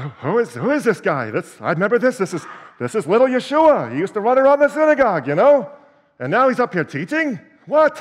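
high, loud, swooping, sing-song cartoon voice. Voicing people questioning who this teacher is, in a Pa Grape voice.

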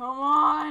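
mock screaming. Mid-game, the speaker quotes their dad shouting at them, imitating dad screaming. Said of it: "my dad's like screaming at me".

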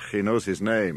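ordinary talk

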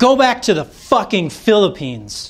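high, restrained shout. Retelling a man at the counter screaming again as he leaves, retelling a scream. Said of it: "he screams again".

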